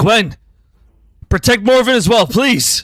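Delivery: high in-character yell. Speaking in character as Asher, calling out to Gwen, yelling in character. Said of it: "in character, he would yell".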